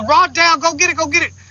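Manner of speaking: high, screaming shout. Telling a fishing story from backstage, act out the moment the rod went down, imitating Chad Dunnigan screaming. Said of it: "Chad Dunnigan was screaming".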